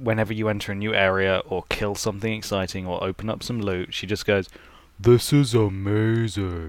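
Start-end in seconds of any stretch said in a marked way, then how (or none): 5.0-6.7 big, very manly he-man voice. Quoting Lilith from Borderlands whenever you open loot, in a very manly voice. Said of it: "in a very manly voice".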